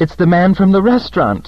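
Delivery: very high, upset and agitated voice. Sarah, watching a shadowy man with the narrator, speaks in agitation. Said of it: "said Sarah in agitation".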